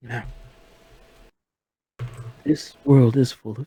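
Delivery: very faint, hushed whisper, almost too low to hear. Speaking in character to the group, whispering. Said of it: "You're whispering too low for your mic".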